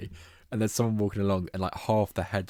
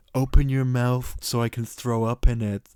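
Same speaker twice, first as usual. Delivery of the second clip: mock earnest, whiny wheedling tone, raised; 4 semitones higher, 5 dB louder than usual. Describing a game scene, imitating the ex-boyfriend to the girl in a mock sincere, whiny voice. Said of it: "in like a really sincere, like whiny way".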